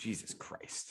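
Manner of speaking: soft, exasperated whisper.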